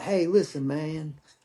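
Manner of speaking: put-on slow Southern drawl. Retelling what a Southern comrade said: slow Southern drawl imitating Doctor. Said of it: "Southern boy, slow talking, drawl".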